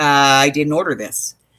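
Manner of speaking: normal talking voice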